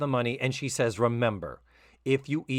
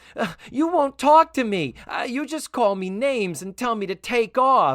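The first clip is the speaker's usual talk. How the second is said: mock bickering tone, higher and louder; 11 semitones higher, 7 dB louder than usual. Retelling a character's argument in an episode: imitating a bickering sister. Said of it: "two sisters fighting".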